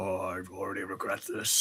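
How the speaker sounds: muttered under breath. A crew member reacts to the captain's choice of crew; muttered under breath. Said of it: "You just hear [name] under his breath".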